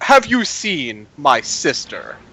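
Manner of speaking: haughty, hoity-toity, swooping and slow. Playing a character talking to a bartender, a little hoity-toity. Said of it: "I act a little hoity-toity".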